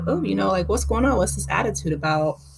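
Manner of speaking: ordinary delivery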